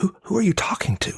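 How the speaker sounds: stage whisper pitched way up high. Retelling how the wife asks about the phone: imitating wife whispering. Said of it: "she'll ask in a whisper".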